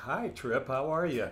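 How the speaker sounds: ordinary talk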